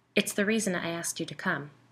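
usual speaking voice

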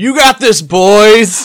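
yelling. Shouting encouragement to the crew while working on the ship: in-character shouting. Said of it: "I start shouting things like".

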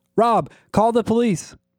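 very high, freaked-out, gasping, panicked shout. The narrator yells out in alarm, voice gasping and freaked. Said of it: "my voice gasping and freaked".

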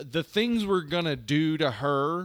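ordinary delivery

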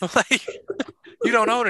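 high voice, laughing while speaking.

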